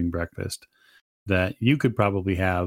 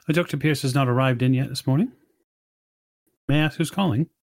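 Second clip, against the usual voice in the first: crisp female voice, higher; 6 semitones higher than usual. Voicing the person who answers an office phone: crisp feminine voice. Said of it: "you hear a crisp, feminine voice".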